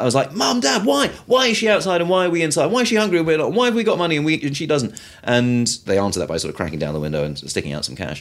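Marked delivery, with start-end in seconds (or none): 0.3-5.0 play-acted, very high, wild, upset screaming. Recalling a family visit, the speaker re-enacts yelling at Mom and Dad, retelling a scream. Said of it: "I started screaming".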